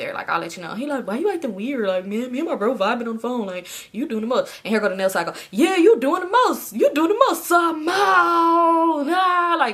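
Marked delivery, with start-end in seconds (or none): 7.5-9.6 loud, high, dragged-out scream. Retelling a phone call, the speaker imitates someone screaming the speaker's name. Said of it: "why are you screaming my name and dragging it like that".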